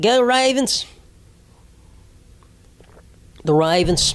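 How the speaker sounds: attempted Baltimore accent. Imagining a listener cheering for the Ravens, in an attempted Baltimore accent. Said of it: "I'm saying it in like a Baltimore accent".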